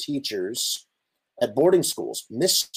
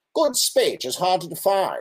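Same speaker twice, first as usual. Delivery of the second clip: imagined 1940s elocution-class accent; 6 semitones higher than usual. Reading a quote from a 1942 speech book in an imagined 1940s elocution accent. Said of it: "I'm going to try and read this in what I imagine that accent is".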